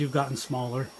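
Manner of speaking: ordinary talk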